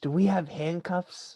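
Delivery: whispered voice. During the game, a player asks another person a question, whispered. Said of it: "I whisper to Jim".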